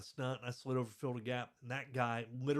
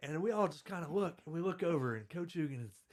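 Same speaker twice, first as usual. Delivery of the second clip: usual speaking voice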